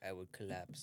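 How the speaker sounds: put-on flat deadpan voice. Retelling someone's answer to an interview question: imitating a deadpan answer. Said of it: "straight face".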